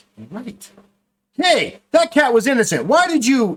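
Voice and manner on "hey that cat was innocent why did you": very high, raised, heated angry outburst. A game master voices a commoner in the crowd, going off angrily. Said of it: "he starts going off on him".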